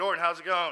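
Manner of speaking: mocking, sarcastic tone. Retelling going up to greet a man headed to prison, acting out a sarcastic greeting. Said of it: "I'm sarcastic".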